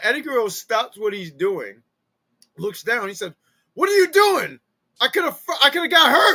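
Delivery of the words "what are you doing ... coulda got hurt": very loud, shrill, high-pitched yell. Retelling Eddie Guerrero yelling at a boy who shook the ladder: imitating Eddie Guerrero yelling. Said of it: "he's yelling at an eight-year-old boy".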